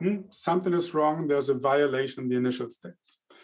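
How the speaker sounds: ordinary talk, nothing marked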